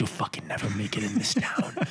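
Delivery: soft, hushed bark under the breath.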